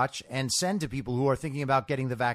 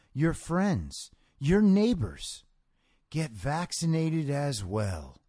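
quiet, sensitive put-on voice with a soft, gentle begging tone. Reading out his quote after calling it creepy, do a quiet, sensitive Joe Biden impression. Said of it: "I'll try to be as Joe Biden-y as possible".

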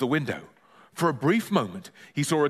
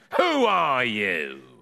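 nasal, barking voice, words barked out. Reading a nosy neighbour confronting a boy: nasal barking voice. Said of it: "he barked nasally".

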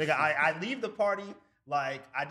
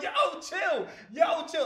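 acted-out yell, much higher pitch; 14 semitones higher, 4 dB louder than usual. Telling a party story, the speaker acts out everyone yelling at a kid: retelling a crowd yelling. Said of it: "everybody's just yelling at him".

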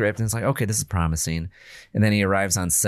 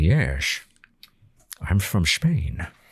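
put-on slower with Scottish accent. Speaker imitates Sean Connery playing a Spanish guy, Sean Connery Scottish accent. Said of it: "but he still has a Scottish accent".

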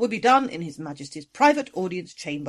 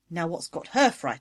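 usual speaking voice

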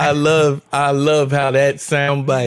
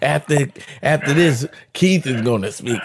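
stumbling, halting announcer-style delivery. Mimicking how the others announced that keith would speak next. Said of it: "that's how y'all said it".

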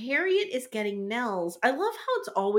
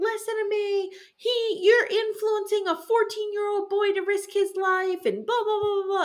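very high-pitched, acted-out yelling; 10 semitones higher than usual. Retelling how Charles burst in on Gambini: imitating Charles yelling. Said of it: "And he's yelling".

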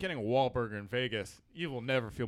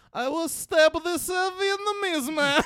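put-on Kazakh accent, higher and louder; 8 dB louder than usual. Doing the reverse, Borat saying a Wahlberg line: Borat voice. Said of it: "or the other way".

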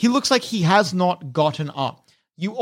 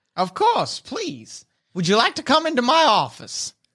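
animated, high, sing-song gnome character voice; 5 semitones higher than usual. Voicing a gnome inviting the players into an office: voicing a gnome. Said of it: "The gnome in the doorway addresses you".

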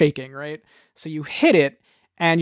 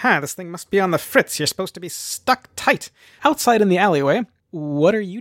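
scowling character voice, pitched higher; 2 semitones higher than usual. Narrating a game, voicing Paradox as he scowls at the player, scowling. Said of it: "he kind of like shakes the clock on his chest and he goes".

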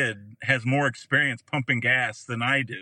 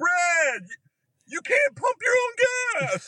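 put-on swooping, animated holler. Retelling how a man came out of the gas station yelling to him, retelling a yell. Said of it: "he's yelling to me".

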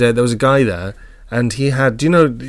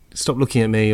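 ordinary talk

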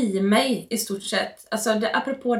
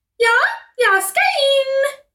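put-on giggly woman's voice, much higher, louder; 7 dB louder than usual. Retelling what a woman answered, imitating a giggling woman. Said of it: "Och så fnissar hon till".

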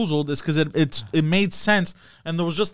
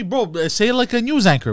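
normal talking voice

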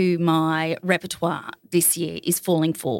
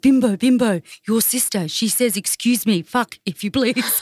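put-on French accent, pitched higher; 5 semitones higher than usual. Retelling a bar story, quoting the bartender talking to Bim, imitating Johnny. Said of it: "the little French bartender".

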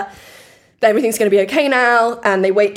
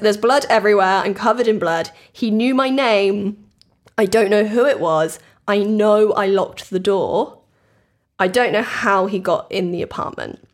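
ordinary talk

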